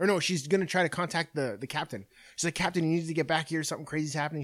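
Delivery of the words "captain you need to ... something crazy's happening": put-on crying, tearful pleading voice. Retelling a movie scene where a character calls the captain: imitating someone crying. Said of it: "She's fucking crying".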